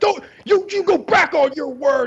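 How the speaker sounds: acted, very high, shrill, stumbling screech. Retelling how a man screamed at Stern over a bet: imitating someone screaming. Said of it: "screaming at Stern".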